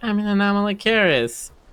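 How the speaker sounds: put-on little girl's voice, pitched high. Retelling a VR chat video about an Anomalocaris avatar: imitating a little girl's voice. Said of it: "this little girl's voice, or small woman's voice, is like".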